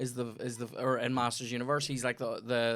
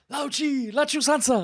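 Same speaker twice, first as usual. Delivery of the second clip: shrill, very high screeching yell; 14 semitones higher, 9 dB louder than usual. Recounting yelling a Temple of Doom quote at a Bond screening: retelling a yelled movie quote. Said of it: "Yelled it".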